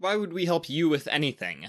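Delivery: insistent, demanding tone. Venus speaks up before Earth can; demanding. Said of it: "demanded Venus".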